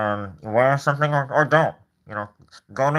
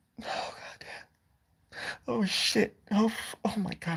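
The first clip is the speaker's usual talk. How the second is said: fake ugly sobbing, higher and quieter; 9 semitones higher, 9 dB quieter than usual. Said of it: "I'm gonna ugly cry".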